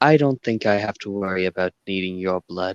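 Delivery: soft half-whisper, very close. Game master voicing Felix behind a player's character, half-whispering in their ear. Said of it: "and whispers in your ear".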